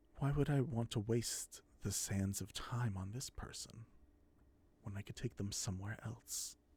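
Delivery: low, soft purr running under every word. Narrating an unseen figure who chuckles and then speaks, low purring voice. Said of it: "the tone is low with a purr".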